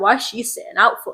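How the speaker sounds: ordinary delivery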